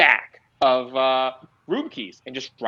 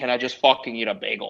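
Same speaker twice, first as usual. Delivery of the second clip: put-on New York accent; 2 semitones lower than usual.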